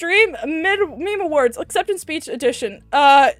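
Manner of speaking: plain reading voice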